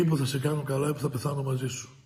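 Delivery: normal talking voice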